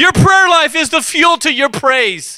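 high, fired-up, excited preaching shout. Telling listeners that prayer life is the fuel, excited yelling. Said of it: "And I know I'm yelling".

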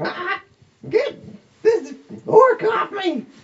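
very high, slow, drawn-out goblin shriek. Voicing a grappled goblin pinned by an orc: goblin screaming. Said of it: "He starts screaming".

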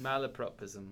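British accent on the word.

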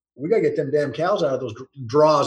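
normal talking voice

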